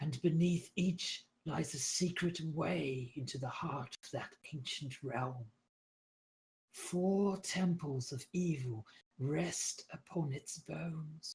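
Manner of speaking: very weak, faint voice. Speaking to listeners as a guide heard in their dream, very weak voice. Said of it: "you hear her very weak voice".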